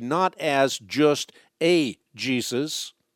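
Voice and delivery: slow, stress on a in a Jesus.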